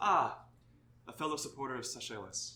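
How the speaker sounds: dreamy, wistful character voice. Voicing Zardos greeting a fellow supporter with a wistful look: wistful, voicing Zardos. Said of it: "gets this sort of wistful look, and he says".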